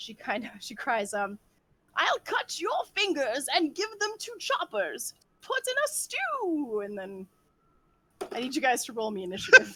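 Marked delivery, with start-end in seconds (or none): 2.0-6.8 awful high shrill screech, swooping, at full volume. A game master voices a woman character screaming at the players, awful screechy scream. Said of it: "in just like a really awful screechy voice".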